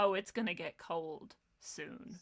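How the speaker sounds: put-on deadpan delivery. Retelling a meeting with governors: deadpan Trump impression. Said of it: "Trump just deadpan looks at them".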